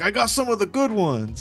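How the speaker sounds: put-on boastful, bragging tone. Imitating a man talking about his lawyers: imitating someone bragging. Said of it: "is he saying that like a flex?".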